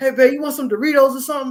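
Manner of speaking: put-on very high, loud, teary crying whine. Retelling a movie scene where Kevin Hart cries on the phone: imitating Kevin Hart crying. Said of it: "he started crying. He's like".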